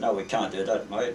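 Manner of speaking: ordinary delivery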